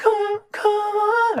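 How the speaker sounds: high-pitched whisper. Demonstrating a layered backing vocal, in a falsetto whisper. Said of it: "I guess it's falsetto".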